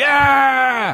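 enthusiastic cheer. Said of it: "do you actually go".

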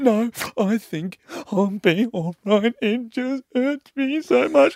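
full sobbing, very high and drawn out. Retelling a friend's words while she was bawling: imitating someone crying. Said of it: "just fully crying".

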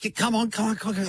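frantic, rushed, hurrying tone, very high-pitched. Retelling how a car wash attendant urges drivers forward: imitating a frantic car wash attendant. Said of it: "The way the guy waves at you, like".

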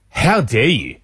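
utterly disgusted, indignant tone. Retelling how a man at the urinal reacted: imitating someone disgusted. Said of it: "looks at me in complete disgust and goes".

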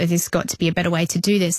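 ordinary talk

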